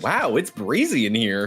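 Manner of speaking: over-the-top, put-on flamboyant camp voice. Retelling what a friend said walking into the venue: imitating a flamboyant voice.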